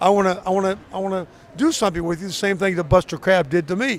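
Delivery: plain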